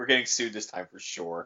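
mock flat, expressionless, low, quick deadpan. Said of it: "Just deadpans into him".

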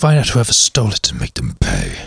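very deep, low, menacing, swooping villain voice. Repeating the other speaker's line, this time in his villain voice. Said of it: "that's my villain voice".

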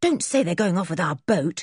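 ordinary delivery

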